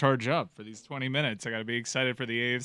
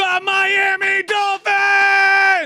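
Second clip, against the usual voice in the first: excited loud shouting, higher and louder; 14 dB louder than usual. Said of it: "You do know what you're yelling about".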